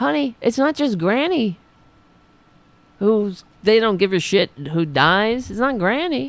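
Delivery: voice climbing and getting raspy.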